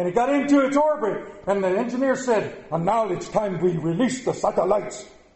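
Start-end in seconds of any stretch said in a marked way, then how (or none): 2.7-5.0 rough, put-on Russian accent. Telling a story about a satellite launch, voice the engineer in a Russian accent. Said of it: "I don't even know if that's the right Russian accent".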